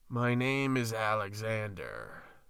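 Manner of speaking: dark, foreboding, menacing hiss. Reading a story, the giant snake answers a stuttering question: dark, foreboding hiss. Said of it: "hissed the snake in its dark and foreboding tone".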